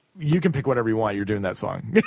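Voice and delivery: ordinary talk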